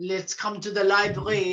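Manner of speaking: low, bad attempt at Belgian accent. Quoting a detective gathering everyone in the library: Poirot voice. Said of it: "goodness knows what accent I'm doing now".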